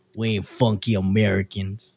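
put-on Texas-style accented English. Speaker from Texas shows how people there talk: Texan accent. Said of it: "I'm from Texas. Talk like this".

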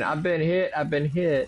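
play-acted, high, frantic, panicky outcry. Retelling a man who freaked out over an acorn, the speaker imitates his panicked screaming.

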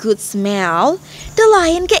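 plain

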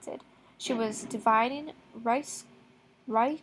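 ordinary delivery, nothing marked

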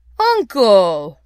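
loud, imploring, pleading cry. Narrator voicing Scrooge's nephew addressing Scrooge, pleading. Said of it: "pleaded the nephew".

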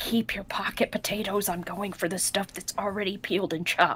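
hushed whispering voice. Acting out a woman's reply to Amund, whispering back. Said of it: "she's going to whisper back".

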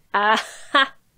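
mocking shout, cried out mockingly. The witch cries out at the king's son, mocking him, cried out mockingly. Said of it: "cried she".

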